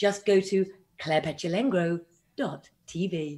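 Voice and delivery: put-on radio presenter, broadcast-style voice. Egged on by the others, the speaker does their radio voice; radio presenter voice. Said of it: "shall I do my um radio voice?".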